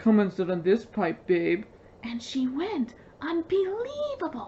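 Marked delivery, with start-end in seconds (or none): 0.0-1.6 put-on man's voice, pitch dropped low. Retelling what a guy said, the storyteller imitates him in a low voice. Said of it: "Jenna puts on a low voice".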